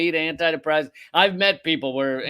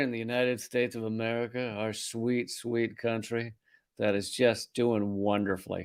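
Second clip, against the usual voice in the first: low, fake calming, sarcastically soothing and reassuring voice; 5 semitones lower, 7 dB quieter than usual. Host moving on to the next news story, mock soothing voice. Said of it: "my soothing voice".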